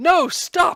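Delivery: piercing, very high, very loud shrill scream. Voicing Verna on seeing someone pull out a sword: screaming.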